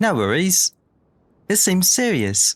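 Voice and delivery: rough, imperfect, put-on, not-quite British accent. Speaker voicing dialogue after deciding to say everything in British, imperfect British accent. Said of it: "My British accent is not perfect".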